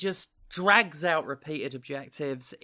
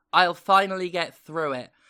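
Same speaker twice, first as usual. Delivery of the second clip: ordinary talk, nothing marked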